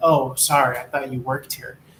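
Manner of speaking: normal talking voice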